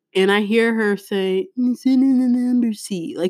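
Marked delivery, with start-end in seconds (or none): 1.5-3.1 high, mocking, sing-song imitation. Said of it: "she actually mocked me".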